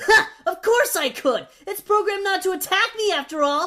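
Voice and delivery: smug, cocky, boastful tone with scoffing ha. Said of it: "Well, obviously, I'd still be alive, and everyone who doesn't like me won't be, of course. What do you think of your battle theme? Well, it's obviously the coolest music you'll ever hear, just as I'm".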